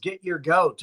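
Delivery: normal talking voice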